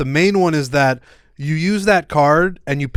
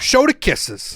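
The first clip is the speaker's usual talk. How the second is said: high, crazy put-on way of talking; 6 semitones higher than usual. Acting as an unknown character demanding the kisses be shown: crazy put-on way of talking. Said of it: "It's a crazy way to talk that I'm talking like that".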